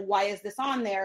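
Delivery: ordinary delivery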